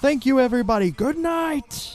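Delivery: put-on tv presenter voice. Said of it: "you gotta say it in the accent".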